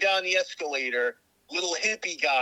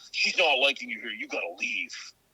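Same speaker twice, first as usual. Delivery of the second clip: mock-posturing chest-puffing guy voice, lower; 4 semitones lower than usual. Retelling an encounter, imitating a chest-puffing guy. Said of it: "the guy's puffing his chest out".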